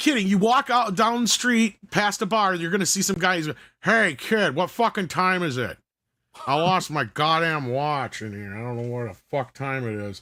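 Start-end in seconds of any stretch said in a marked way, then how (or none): 3.8-10.2 put-on drunk man's voice. Retelling a guy outside a bar asking the time, put-on drunk man's voice. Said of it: "And this guy's drunk. ... we'd all do that voice".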